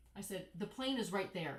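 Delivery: plain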